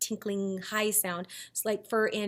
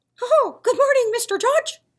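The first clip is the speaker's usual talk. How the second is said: very high, loud, squeaky cartoon voice; 12 dB louder than usual. Saying good morning to Mister Judge in a Mickey Mouse voice. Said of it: "that last one was my Mickey Mouse impression".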